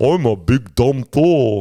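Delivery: very slow, drawn-out, dopey dumb voice. Complaining about a movie, imitating its character: dumb Thor. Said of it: "where he's just like".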